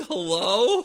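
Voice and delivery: loud, hollering, calling yell. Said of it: "he's yelling".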